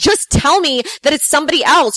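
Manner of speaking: acted, mild, insistent, contained yelling. Retelling how a man followed the speaker to the car, imitating his yelling. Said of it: "he's like yelling at me now in the parking lot".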